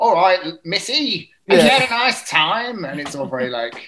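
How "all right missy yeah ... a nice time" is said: loud, high, belted-out Cockney accent. Describing how a hotel worker would have to talk, Bert-style Cockney accent.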